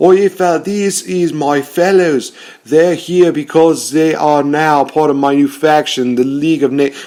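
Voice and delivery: put-on Australian accent, high. Recounting a wrestling storyline, quoting Sheamus: Sheamus in fake Australian accent. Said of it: "Why am I making him sound like Australian?".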